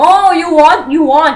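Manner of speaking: very loud, high-pitched, bad put-on Chinese accent. Retelling what the vendors kept saying, in a bad Chinese accent. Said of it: "I'm really doing a bad Chinese accent".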